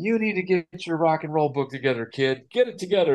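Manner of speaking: high, screaming, scolding voice. Telling about being on stage, the speaker imitates Mark Hutchins screaming at him. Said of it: "Mark Hutchins screaming at me".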